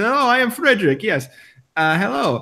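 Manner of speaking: weak attempted German accent, high, slow. Retelling how Frederick introduced himself when asked who he was; imitating Frederick's German accent. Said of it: "this doesn't sound German. I don't. I can't do German".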